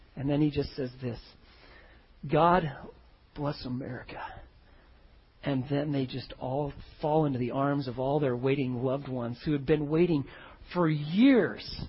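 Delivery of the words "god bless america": put-on voice breaking with emotion, lower and quieter. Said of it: "his voice is just breaking up as he's saying this".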